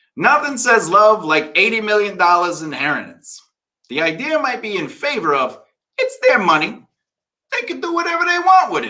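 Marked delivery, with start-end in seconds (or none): 6.0-8.9 very high, Brooklyn accent slipping out. Speaker discussing animals inheriting millions, brooklyn accent coming out. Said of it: "as my Brooklyn accent comes out".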